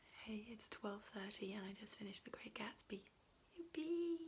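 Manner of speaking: speaking quietly. Checking in at twelve thirty while a boyfriend sleeps: speaking quietly. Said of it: "so I'm trying to be quiet".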